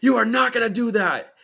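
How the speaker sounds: very high-pitched, shrill, loud scream. Retelling being home alone and sensing something: retelling own scream. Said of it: "I just start screaming, like".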